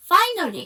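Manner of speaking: finally stressed, called out high and loud.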